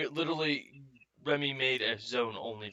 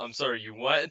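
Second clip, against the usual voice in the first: ordinary talk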